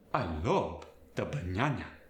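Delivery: Spanish accent, banana said as bañana. Explaining Spanish accents for voicing characters, giving an example in Spanish accent. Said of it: "a native Spanish speaker just automatically adds the tilde".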